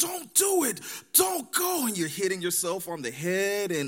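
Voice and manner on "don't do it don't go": mock shout, very high, very slow, drawn out. Describing watching a suspense show, mock yelling at the TV at a character. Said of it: "you're there yelling at the television".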